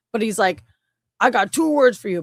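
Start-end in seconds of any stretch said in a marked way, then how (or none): 1.2-2.2 softer, put-on Brooklyn accent. Imitating how Chris Pratt voices Mario: Chris Pratt's Mario voice, soft Brooklyn. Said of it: "like, Brooklyn accent".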